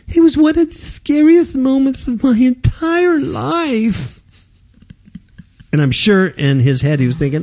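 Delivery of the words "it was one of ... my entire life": very high-pitched, mocking voice. Quoting a YouTuber's statement about an airport ordeal: imitating Gigi's voice. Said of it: "should I do his voice?".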